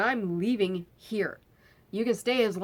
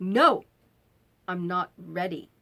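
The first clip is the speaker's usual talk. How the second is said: play-acted, slow, snappish, curt delivery. Retelling how the friend snapped at them: imitating a friend snapping. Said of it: "he just sort of snapped at me".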